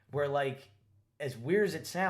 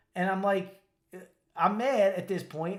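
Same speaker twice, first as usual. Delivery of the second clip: usual speaking voice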